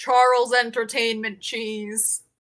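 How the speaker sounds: very deep, low mascot character voice. Asked his name in a whisper before the marriage, very deep voice. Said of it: "Very deep voice".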